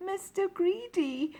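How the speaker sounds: tiny, very high, frightened squeak. Narrator reads a frightened character answering a giant; squeaky voice. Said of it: "he squeaked".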